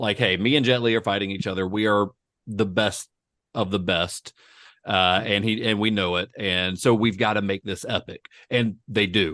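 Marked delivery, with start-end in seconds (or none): none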